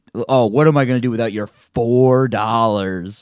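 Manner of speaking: acted condescending voice. Retelling what he said to someone leaving his Patreon, mock-patronizing tone. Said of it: "Very patronizingly".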